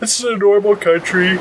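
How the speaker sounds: talking through a yawn. In a group conversation, speaking a line while yawning. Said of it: "That was a yawn".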